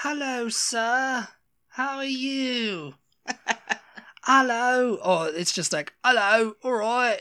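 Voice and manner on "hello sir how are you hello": generic British accent, very high pitch, very slow pace. Showing how people practicing a british accent usually sound, generic british accent. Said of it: "practicing their British accent".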